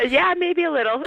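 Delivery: talking through tears, very high-pitched, tearful voice. A radio guest, told she is on air, answers the hosts while crying while talking. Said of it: "Only because I'm crying".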